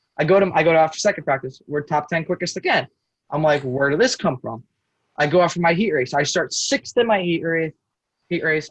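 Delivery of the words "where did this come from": ordinary delivery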